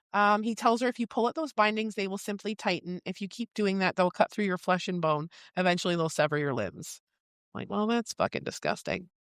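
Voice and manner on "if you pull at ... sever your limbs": ordinary talk, nothing marked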